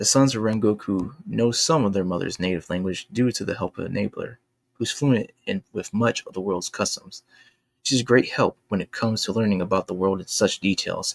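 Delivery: ordinary delivery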